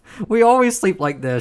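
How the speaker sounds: high, loud, indignant tone.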